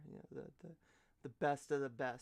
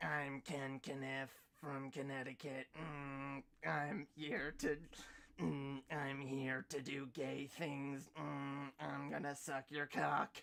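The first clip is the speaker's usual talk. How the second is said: put-on voice-box distorted voice, quieter; 5 dB quieter than usual. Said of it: "[name] mocking Ken Kniff with the, ... the voice box thing".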